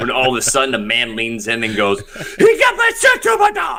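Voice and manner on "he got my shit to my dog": put-on very high, loud, slow, drawn-out German accent. Acting out a man who leans in and speaks: german accent. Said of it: "you know which accent I really love? German".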